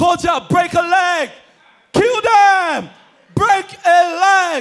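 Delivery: loud, high, drawn-out cheering shout. Retelling a girlfriend cheering from the crowd: imitating a friend shouting.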